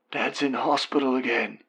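strained, hoarse, high half-whisper. Reading Mum's line spoken on the phone: hoarse half-whisper. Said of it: "she whispers hoarsely".

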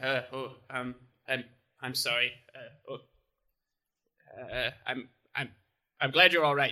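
sheepish, abashed, faltering, stammering delivery. Voicing a character who apologizes after being hurt: abashed, sheepish apology. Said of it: "look a little bit abashed at that".

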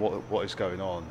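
plain

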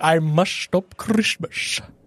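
very slow, drawn-out British-ish drawl. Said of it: "people compared him to Sean Connery".

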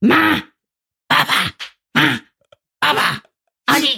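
put-on slow, raspy toddler babble. Describing her almost two-year-old son, the speaker imitates him: imitating George's raspy voice. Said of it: "he has a real raspy voice".

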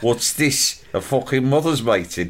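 put-on Brummie accent. Retelling what Ash always said walking into a room, in his brummy accent. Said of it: "In his brummy accent".

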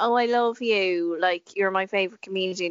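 mock sarcastic gushing, kid-like. Retelling what twelve-year-olds say on the live stream: imitating sarcastic kids. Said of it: "just dripping in sarcasm".

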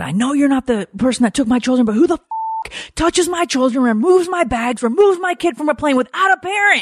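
mock outraged scream, shrill, very high, climbing. Retelling screaming at a man in the jetway over the children, reenacting angry screaming. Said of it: "So I am screaming at this gentleman named Kevin".

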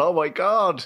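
high-pitched mock scream.

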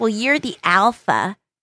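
put-on childlike, cutesy baby talk voice. Retelling what she said to him, in a baby voice. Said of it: "her saying in a baby voice".

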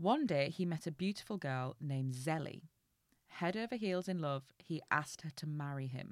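plain reading voice

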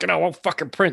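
mock angry yelling. Retelling Mom yelling at the printer, imitating her angry yell. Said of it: "she was yelling at the printer".

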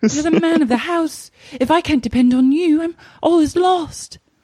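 very high, affected, put-on proper English accent. Acting out a scene with a partner, in a put-on proper english accent. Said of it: "perfecting my proper English accent".

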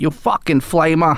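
put-on Boston accent. Retelling coworkers at the forklift job taunting him: Boston accent from The Departed. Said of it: "You know that accent".

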